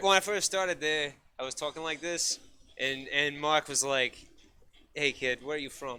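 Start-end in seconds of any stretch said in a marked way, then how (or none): 4.9-6.0 put-on Italian accent, quieter. Retelling what the prep chef Mark asked: imitating Mark's Italian accent. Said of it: "We can use his accent".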